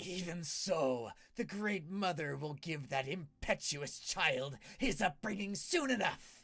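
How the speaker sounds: growled, snarling dragon voice. Game master voicing a dragon that snarls at the players, snarling dragon. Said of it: "the dragon claws kind of snarls at you and he says".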